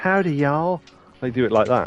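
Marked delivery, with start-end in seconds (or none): 0.0-0.8 put-on, high-pitched Southern US belle accent. Explaining how English game dubs render a Kansai accent: Southern Belle American accent. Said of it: "like a Southern Belle sort of American accent".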